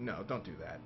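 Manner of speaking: mock very deep, utterly deadpan, stone-cold flat. Retelling Ed Boon's reply when James asks to interview him with a banana, imitating his stone-cold reply. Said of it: "Just like totally stone cold".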